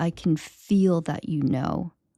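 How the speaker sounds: mock crying, tearful voice. Retelling what a woman on the table said: imitating someone crying. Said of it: "she says through her tears".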